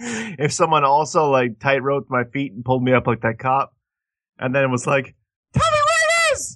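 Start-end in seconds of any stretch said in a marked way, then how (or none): 5.5-6.6 very high, squeaky cartoon voice. Imagining being hung up and questioned: Mickey Mouse voice. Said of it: "like that, like Mickey Mouse".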